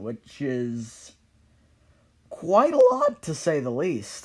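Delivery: voice breaking partway through the phrase. Moving on to the next one to talk about, voice cracking. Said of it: "Also a voice crack".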